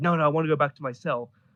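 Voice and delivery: ordinary delivery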